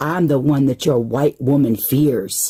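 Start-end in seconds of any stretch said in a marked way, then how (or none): none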